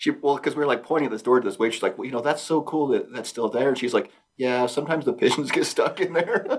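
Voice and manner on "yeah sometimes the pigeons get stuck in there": mock mournful, sad, slightly high little aside. Retelling what a waitress said to the group, imitating her sounding sad. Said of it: "She said it like sad".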